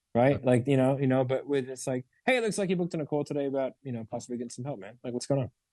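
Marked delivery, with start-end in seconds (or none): 2.2-5.5 curious, cheerful, light, upbeat, faster delivery. Demonstrating how to open a call with someone who booked it, curious and cheerful. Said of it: "it's curious, it's cheerful".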